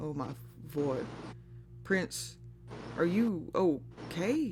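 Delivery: worried, deeply concerned, very slow and drawn out. Voicing a wizard reaching out after a shock: concerned.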